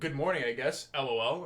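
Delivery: pointed, begrudging, passive-aggressive pleasant tone. Reading out a text that starts off passive aggressive: imitating a passive-aggressive text. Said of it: "it starts off passive aggressive".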